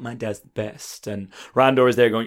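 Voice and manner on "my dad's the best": put-on very quiet, hushed, self-satisfied, smug tone. Voicing a character sitting by while her dad wins: smug Tila voice. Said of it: "Tila is smugly sitting there going".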